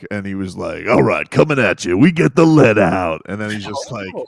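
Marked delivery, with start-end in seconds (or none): 0.9-3.2 classic rock radio DJ patter. Imagining a colleague's past as a classic rock radio DJ: imitating Len as a rock radio DJ. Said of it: "Len back in the day probably was, like, doing classic rock".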